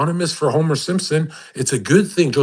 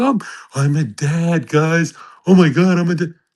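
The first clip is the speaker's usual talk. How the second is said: play-acted, overwrought, emotional, drawn-out, overexcited gushing; 2 semitones higher than usual. Mocking an imagined new dad, put-on emotional gushing. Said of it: "emotionally unstable and going like".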